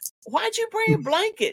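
high, surprised tone.

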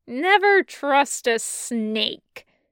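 speaking through clenched, gritted teeth. Reading a story aloud, a captive taunting his captors: speaking through clenched teeth. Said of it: "he says through clenched teeth".

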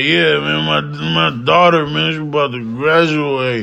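imitated drunken slurred speech. Retelling a drunk barber's rambling: imitating drunken slurred speech. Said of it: "he's slurring his words like".

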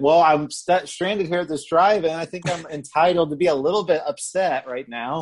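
put-on irritated, put-upon tone. Retelling a stranded man's reply to a woman angry at him, imitating him getting mad. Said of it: "she gets mad at him for getting mad".

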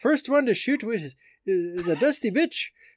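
attempted Irish accent. Reading out a UFC fighter's billboard message, speaker attempts an Irish accent. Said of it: "I wish I could say it with an Irish accent".

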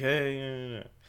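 low, half-hearted, unenthusiastic mutter under the breath. Retelling a mother's reply to a neighbor: imitating a mutter under the breath. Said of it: "under her breath".

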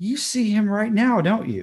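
whispering while giggling. Speaker retelling leaning down to a woman's ear, in a giggly whisper. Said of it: "I'm giggling and I'm whispering in her ear".

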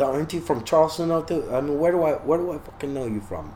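put-on heavy New Jersey tough-guy accent. Retelling meeting an interesting character, imitating a thick accent. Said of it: "he's got the thick accent".

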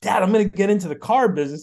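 high, fast, excited blurt. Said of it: "I was so excited to tell him".

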